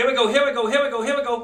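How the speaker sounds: quick delivery. Teaching a group another way to say a call, demonstrating it said fast. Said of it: "but we say it fast".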